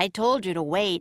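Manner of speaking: ordinary delivery, nothing marked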